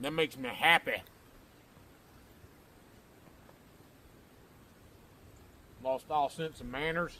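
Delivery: talking with mouth full of food. Eating after being starved, talking with mouth full. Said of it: "Talking with food in my mouth".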